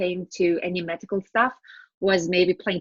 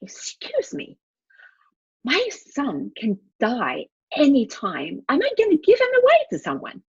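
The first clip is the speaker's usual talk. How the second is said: mock, slightly angry indignation, rising and pitched up; 7 semitones higher than usual. Retelling own reply to a social worker: retelling own angry reply. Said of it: "I turned a bit angry".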